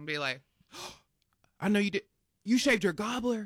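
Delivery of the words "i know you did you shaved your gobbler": stunned, shocked, caught off guard. Playing a scene set up by a partner, the speaker reacts shocked. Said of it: "You are shocked".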